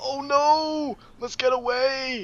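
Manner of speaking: very high, slow, squeaky panicked voice. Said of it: "he's like".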